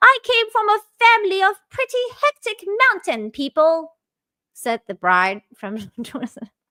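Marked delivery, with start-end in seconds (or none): 0.0-3.9 put-on British accent, pitched very high. Reading out a bride's wedding story, in a british accent. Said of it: "I'll do this in the British accent".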